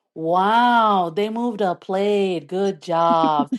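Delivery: very slow, dripping sarcasm, drawn-out wow. Retelling a reply to aunties about a simple task: sarcastic mock praise. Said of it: "I'll just like sarcastically be like".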